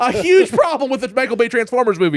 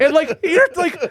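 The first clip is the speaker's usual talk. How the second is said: ordinary talk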